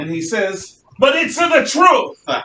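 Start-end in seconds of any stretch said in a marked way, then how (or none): 1.0-2.4 put-on very high, slow, stretched-out Italian accent. Speaker quoting Galileo's retort to the church, in a Galileo Italian-accent impression. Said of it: "because that's my Italian uh, impression".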